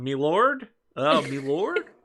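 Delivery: put-on awful, very slow old English accent. Imitating a castmate who is bad at accents: Eric's bad old English accent. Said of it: "that's not an old English accent".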